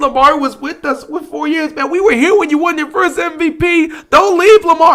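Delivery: very high, fake blubbering, pleading sobs. A Ravens fan acts out the crying fan he won't be, mock crying. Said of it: "am I gonna sit here and cry".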